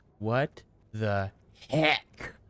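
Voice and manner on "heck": stress on the word heck. Saying three words to the others: stress on heck. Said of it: "put a little emphasis spin on the word heck".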